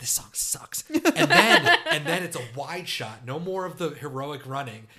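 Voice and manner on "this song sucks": mock mutter, much quieter. Describing a film scene where a running woman stops, retelling a mutter. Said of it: "just muttered".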